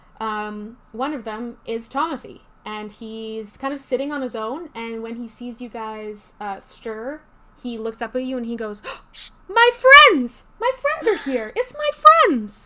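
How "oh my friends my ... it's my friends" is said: overjoyed, very high, loud and swooping. Narrator voices Tomothy greeting the players as they stir: delighted Tomothy voice. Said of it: "he looks very pleased to see you".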